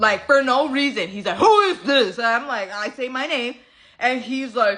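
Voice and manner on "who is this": loud, demanding, put-on angry man's voice. Retelling a phone call where an angry guy answers; imitating an angry man. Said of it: "This guy is angry".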